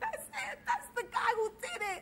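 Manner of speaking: put-on high screaming girl voice. Recounting a street scene where a girl points out a man, retelling her scream. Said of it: "this girl comes out screaming".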